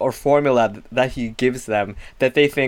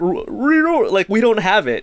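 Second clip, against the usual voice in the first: put-on sobbing, higher pitch, slower pace; 9 semitones higher than usual. Describing Scooby-Doo at his most scared, imitating Scooby-Doo sobbing. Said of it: "he's sobbing and saying like".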